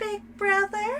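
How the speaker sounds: put-on high, slow little girl voice. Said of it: "I'm gonna do that in that voice every time".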